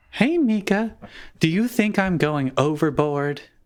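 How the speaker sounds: classic high, doting motherly voice. Answering another player's request to voice the mom: mom voice. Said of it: "Do a mom voice".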